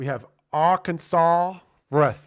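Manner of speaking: loud, clumsy, fake, bad Arkansas accent. A host introduces the next fight, arkansas wrestling, in a bad arkansas accent. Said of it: "that was a terrible impression of a Kansas, uh, Arkansas uh, person".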